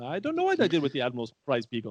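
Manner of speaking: put-on botched accent, like an Indian leprechaun. Quoting a line from the episode to the other hosts, bad Simon Pegg impression. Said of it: "that was like an Indian leprechaun".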